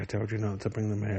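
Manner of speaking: ordinary talk, nothing marked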